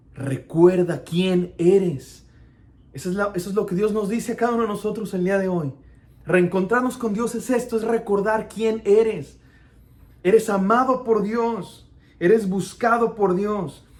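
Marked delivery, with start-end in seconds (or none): 0.2-2.3 deep voice dropped right down low. Retelling how Mufasa's voice spoke to Simba, in a deep Mufasa voice. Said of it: "con esta voz profunda de Mufasa".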